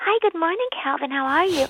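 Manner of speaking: silly, high-pitched voice.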